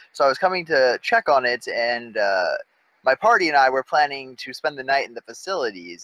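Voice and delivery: ordinary delivery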